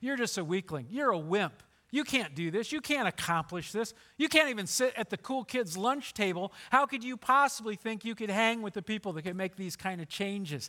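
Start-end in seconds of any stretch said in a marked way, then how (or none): none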